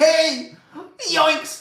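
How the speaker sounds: very high, loud, goofy cartoon voice yelp. Noticing their voice slipped into a cartoon voice, showing it: Shaggy voice. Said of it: "my voice went to like Shaggy from Scooby Doo".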